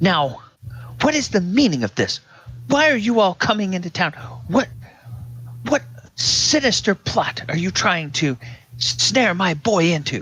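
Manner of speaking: accusatory yelling. A lady confronts the group about her boy, yelling accusingly. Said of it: "Why are you yelling in my face?".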